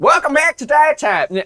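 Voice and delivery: put-on Southern accent. Welcoming listeners back to the show in a put-on Southern accent. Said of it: "why did I go southern?".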